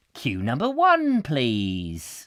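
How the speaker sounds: very slow, condescending, drawn-out sing-song announcer voice. Acting out a planning meeting picking the tannoy line: condescending tannoy announcement.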